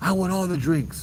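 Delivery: play-acted, greedy, shrill, demanding yell. Retelling a man yelling demands at the speaker's coworker, retelling his yelling. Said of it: "he's just yelling and yelling and yelling".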